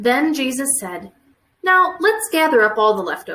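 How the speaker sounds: plain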